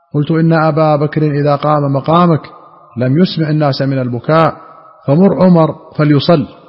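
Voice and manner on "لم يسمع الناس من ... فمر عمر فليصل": normal talking voice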